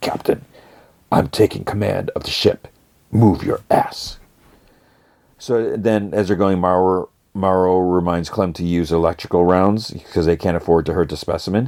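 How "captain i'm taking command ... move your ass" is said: quiet whispered voice. Recounting a scene, voicing a man speaking to the captain, in a whisper. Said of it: "He like whispers".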